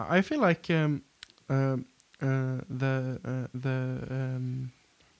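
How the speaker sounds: stuttering, stammering. Starting to make a point in a discussion, stuttering.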